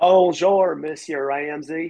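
put-on Southern American accent. Trying to speak French, slipping into a Southern American accent. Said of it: "Oh, that's a southern. See, look, I just went southern".

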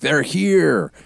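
put-on yelling, shrill and high. Recalling the end of Invasion of the Body Snatchers: imitating Kevin McCarthy yelling.

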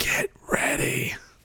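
quiet whisper. Player turns around to tell the group to get ready, in a whisper. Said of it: "I'm going to turn around and whisper it".

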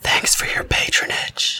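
whispering. Voicing a character who whispers in a dying man's ear: whispering. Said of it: "I whisper in his ear".

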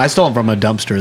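ordinary delivery

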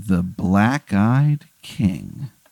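low, slow, ominous voice. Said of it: "when he says that guy's name, a shiver runs down your spine".

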